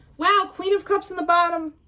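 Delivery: shrill, very high, loud yelling outburst. Doing a tarot reading for Pisces, yelling. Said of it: "I'm sorry for yelling".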